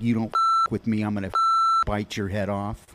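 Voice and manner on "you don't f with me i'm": ordinary delivery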